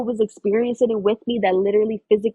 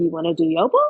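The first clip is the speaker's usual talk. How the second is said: put-on excited voice, lower; 5 semitones lower than usual. Retelling the shaman's question about doing Yopo: imitating someone excited. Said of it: "she's super excited about the medicine".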